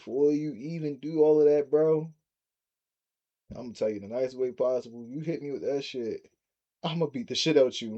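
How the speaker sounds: ordinary delivery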